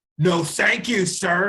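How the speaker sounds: loud, drawn-out voice. Retelling a man turning down an offered sandwich, imitating a loud refusal. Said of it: "And got all loud".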